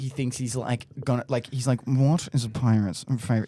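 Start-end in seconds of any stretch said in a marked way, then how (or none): 1.9-3.5 mock smug delivery, lower. Reenacting a friend's dating app voice memo joke: imitating a friend's smug joke delivery. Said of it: "He says it like that".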